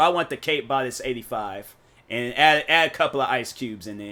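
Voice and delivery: ordinary talk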